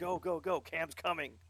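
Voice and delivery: frantic urgent yell, high-pitched and very loud. Retelling a voice-chat moment while letting him through, retelling a yell. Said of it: "I'm just yelling at him".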